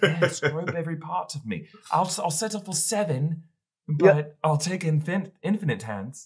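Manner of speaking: imitated, fake British accent. Acting out what a man said, in a put-on British accent. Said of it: "My British accent changes every time".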